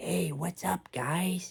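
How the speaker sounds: soft, creaky, squeaky little voice. Showing listeners how your friend sounds when he greets people, imitating friend David. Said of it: "he sounds like this".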